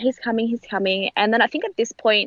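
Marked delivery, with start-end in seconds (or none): none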